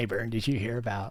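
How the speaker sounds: goofy eighties-style character voice. Greeting someone nicknamed Burn, the speaker slips into an Ernest voice. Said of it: "that voice, I think of two different people from the eighties".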